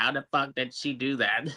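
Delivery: angry, pissed-off, disbelieving, baffled outburst. Retelling a character's reaction to Ahsoka: imitating someone pissed off. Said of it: "He's all pissed off at Ahsoka".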